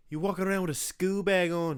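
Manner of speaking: loud, high-pitched Irish accent. Naming a favourite impression, the speaker does a Conor McGregor impression. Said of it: "Because you just do an Irish accent".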